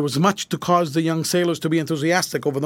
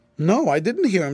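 ordinary delivery, nothing marked

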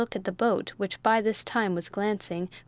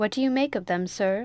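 ordinary delivery

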